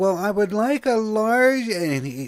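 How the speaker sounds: very high, loud, put-on old-lady granny voice. Retelling a caller ordering a pizza in a little old lady voice. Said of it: "sounded like this old bitty lady".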